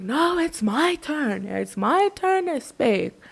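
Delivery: put-on slow, high-pitched drunken insistence. Retelling how Amalda kept interrupting Lee on screen: imitating drunk Amalda. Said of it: "fucking drunk out of her mind".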